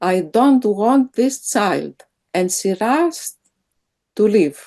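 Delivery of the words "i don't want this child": firm, loud, flat-out delivery. Retelling what a woman said in a treatment session, in a firm, loud voice. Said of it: "said in a firm, loud voice".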